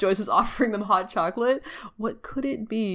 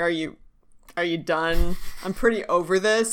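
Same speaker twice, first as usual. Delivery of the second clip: ordinary delivery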